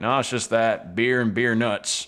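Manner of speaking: put-on country accent. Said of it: "barkeep's like".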